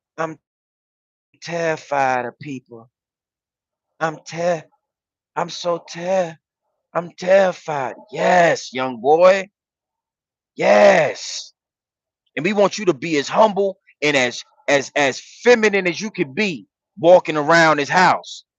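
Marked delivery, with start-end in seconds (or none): 0.2-8.0 gentle, softened, light and hushed put-on voice. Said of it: "Try it again".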